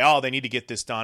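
ordinary talk, nothing marked

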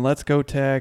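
put-on screaming fan voice. Retelling what a fan next to him kept doing: imitating a fan screaming. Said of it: "he went from screaming".

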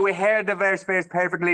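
high West Dublin brogue. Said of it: "there you are in a fine West Dublin accent".

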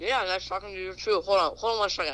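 muffled speech through a full mouth. Caller greeting the hosts on the line, talking with mouth full. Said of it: "I have my mouth full of something".

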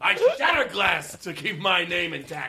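put-on angry boastful tone. Imagining someone after throwing a person out the window: imitating an angry boast. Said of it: "He got angry and threw someone over".

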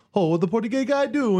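light Hawaiian pidgin. Telling another joke about a portuguese guy: slight pidgin affectation. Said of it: "slight pidgin affectation".

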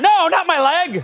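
high, slow, loud begging.

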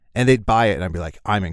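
ordinary talk

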